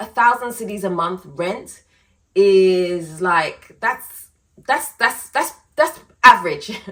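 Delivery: stammering repeatedly on "that's". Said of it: "I'm stuttering".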